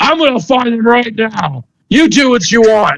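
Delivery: high, furious, fed-up outburst. Retelling a scene where a man gets super angry and heads downstairs: mock super angry. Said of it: "He's like super angry".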